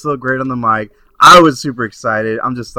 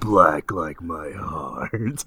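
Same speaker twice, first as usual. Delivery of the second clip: very deep, very slow, dragged-out character voice; 7 semitones lower, 10 dB quieter than usual. Answering as the Undertaker how he takes his coffee: Undertaker voice. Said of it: "Taker, how do you like your coffee?".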